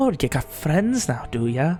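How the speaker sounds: sly, cocky, condescending whisper. Narrating a mother whispering so only you can hear, in a sly, condescending whisper. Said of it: "sly, almost condescending cockiness in her voice".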